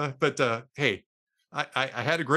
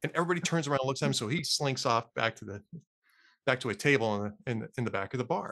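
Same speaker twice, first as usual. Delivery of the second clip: ordinary delivery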